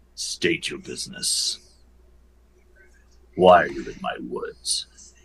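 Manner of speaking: very deep, gruff, breathy half-whisper. A centaur challenges the people in his woods in a very deep, gruff voice. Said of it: "In this very deep, gruff voice".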